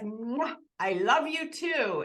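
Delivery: slow, put-on French accent. Quoting what he said back to her on the show, put-on French accent. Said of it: "he said it in a French accent".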